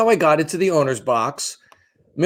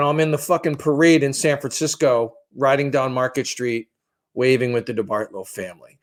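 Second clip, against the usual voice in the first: ordinary delivery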